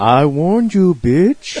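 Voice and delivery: flat, monotone voice. Speaker mimics how a man they know talks, in a monotone impression. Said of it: "In that fucking monotone voice he has".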